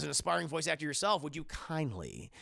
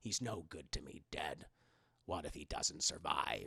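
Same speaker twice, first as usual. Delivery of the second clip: very deep, low, gravelly growling delivery; 12 semitones lower, 8 dB quieter than usual. Speaker demonstrating a voice from the pre-Attack of the Clones special editions: gravelly put-on voice. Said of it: "He has that kind of gravel".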